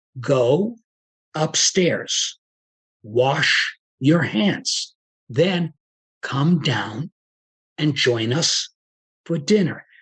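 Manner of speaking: very slow, halting, broken into short pieces. Giving an example instruction, spoken slow, in short separated chunks. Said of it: "I have chunked it so that it's slower".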